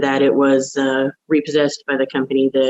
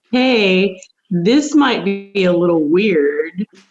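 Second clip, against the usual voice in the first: strongly put-on British accent; 6 semitones higher than usual. Retelling how the other person first phoned, in a very British accent. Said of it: "in this very British accent".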